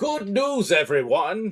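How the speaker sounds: very high, loud, shrill belted shout. Answering a remark about Farnsworth with a quick line: Professor Farnsworth voice. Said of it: "said it was, uh, Farnsworth himself".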